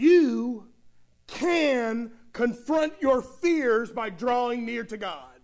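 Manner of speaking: strong stress on you. Addressing listeners about confronting fears, strong stress on you. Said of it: "how I emphasized that word, you?".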